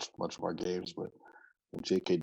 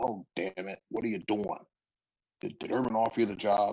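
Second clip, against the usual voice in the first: put-on gruff, grumbling old man voice; 3 semitones higher than usual. Retelling a phone call from an old coach: imitating Coach Bruce, gruff old man. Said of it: "this old gruff old man now".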